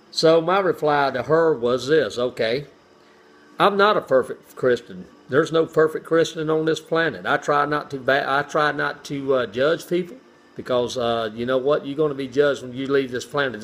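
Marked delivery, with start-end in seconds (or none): none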